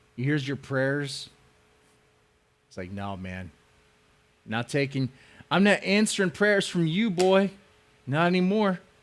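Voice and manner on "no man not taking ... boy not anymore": put-on plain Southern-accented delivery. Joking that God no longer answers someone's prayers, the speaker voices God in a southern accent. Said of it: "I don't know why God sounds southern".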